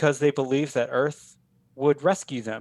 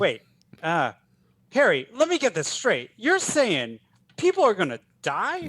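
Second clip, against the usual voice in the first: pitched-up character voice with swooping pitch; 6 semitones higher than usual. Pitching a movie scene where an alien character speaks: Steve Buscemi impression. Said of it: "your Buscemi impersonation".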